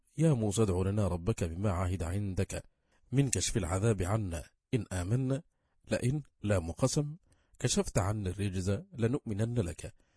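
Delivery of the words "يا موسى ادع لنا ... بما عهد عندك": plain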